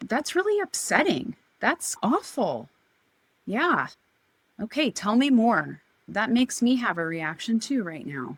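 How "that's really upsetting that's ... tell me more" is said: a little firm, emphatic, with swooping pitch. Describing how to respond to upsetting news, the speaker demonstrates a slightly firm, emphatic voice. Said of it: "a little firmness in my voice and I'm a little emphatic".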